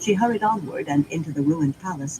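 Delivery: plain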